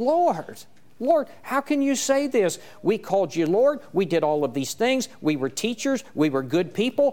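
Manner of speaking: stunned, disbelieving voice. Speaker voices people protesting to their Lord, acting out shocked disbelief. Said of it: "you can hear the shock in these people's voice".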